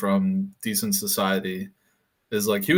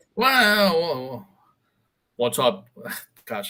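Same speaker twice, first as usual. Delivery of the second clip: failed fake British accent, very slow, swooping drawn-out "wow"; 6 semitones higher than usual. Introducing Nick Faldo at the golf course, then answering as him: failed Nick Faldo British accent. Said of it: "I can't do a British accent".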